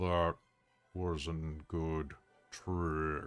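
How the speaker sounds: deep, soft, rumbling voice. Voicing a character who speaks for the first time after only moaning, deep, rumbling voice. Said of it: "He'll say in this deep, rumbling voice".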